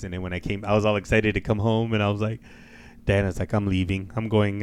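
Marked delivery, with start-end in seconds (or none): none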